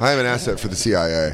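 normal talking voice

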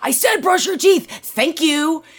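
very high, put-on annoyed sarcasm. Retelling what she says to her child after many requests: imitating her own sarcastic thank-you. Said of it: "I'm saying a very sarcastic thank you".

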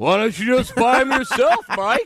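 big booming voice, cutting in. Retelling a call where a producer suddenly cut in: booming voice imitating Eric Fenton. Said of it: "I hear a booming voice from over the top that says".

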